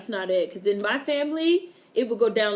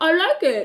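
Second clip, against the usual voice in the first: loud, pitched-up speech through a full mouth; 8 semitones higher, 7 dB louder than usual. Acting out someone eating bad food, imitating talking around food. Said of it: "as you try to talk around the nasty ass food in your mouth".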